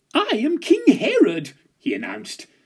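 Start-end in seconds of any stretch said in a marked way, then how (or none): 0.2-1.6 very high, loud, slow, proclaiming panto-dame voice. A lad on the chair he calls his throne announces himself: Widow Twankey panto voice. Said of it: "in a voice usually reserved for Widow Twankey in a panto".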